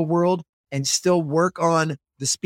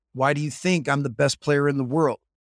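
put-on, very serious tone; 2 semitones lower than usual. Retelling a player's answer to a question, imitating a very serious tone. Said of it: "he said with a very serious tone".

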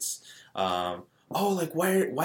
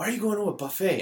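high-pitched yelling; 8 semitones higher than usual. Retelling how their dad yelled at them, retelling dad's yell. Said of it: "my dad like yelled at me like".

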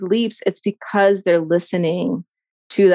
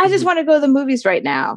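sudden, pitched-up, swooping pissed-off angry outburst; 6 semitones higher than usual. Voicing a sudden inner voice that rages out: imitating a pissed-off inner voice. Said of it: "It's so pissed off".

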